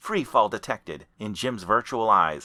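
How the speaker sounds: plain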